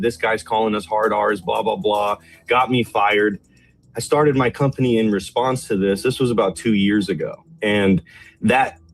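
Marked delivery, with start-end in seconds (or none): none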